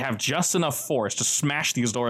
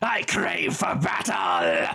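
very slow, swooping, drawn-out battle cry; 5 semitones higher than usual. Voicing a character on a barrel before battle: screaming a battle cry. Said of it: "climbs up onto a barrel and just screams".

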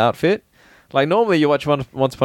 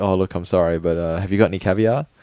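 mock apologetic tone, lower; 6 semitones lower than usual. Retelling a movie scene where the character gets disappointed: imitating an apologetic tone. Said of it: "he does this apologetic face".

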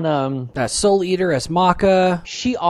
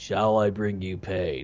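very low, flat, deep, soft monotone drone; 11 semitones lower, 8 dB quieter than usual. Mocking the Advent Children Sephiroth's few lines, monotone Sephiroth impression. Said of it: "he sounded so monotone".

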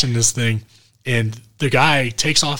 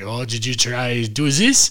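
put-on German accent in English; 4 dB quieter than usual. Speaker retelling what a man said to a woman: German accent. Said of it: "he's talking with a German accent".

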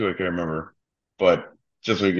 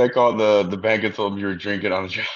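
ordinary delivery

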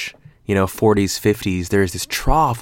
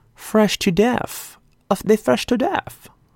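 weird, silly, very high put-on voice; 13 semitones higher than usual. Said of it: "Is it like my baby voice?".

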